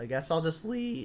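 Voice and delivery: voice breaking mid-phrase, cracking up high. A card player thinking aloud about which card to lead, voice cracks. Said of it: "that was a voice crack".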